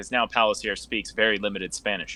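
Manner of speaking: normal talking voice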